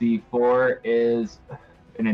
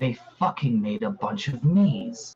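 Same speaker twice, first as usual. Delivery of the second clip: frustrated, quiet mutter under breath. Voicing a visibly frustrated fighter reacting to copies of himself: Kalam muttering under his breath. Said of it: "hear him under his breath be like".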